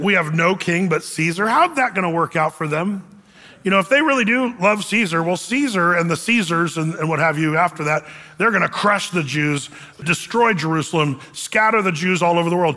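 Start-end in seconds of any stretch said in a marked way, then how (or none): none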